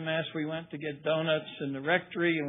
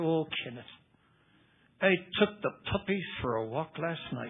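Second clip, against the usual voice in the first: put-on Irish brogue, laid on thick. Retelling a priest calling him in: imitating an Irish accent. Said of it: "in this great Irish accent".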